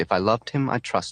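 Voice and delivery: ordinary delivery, nothing marked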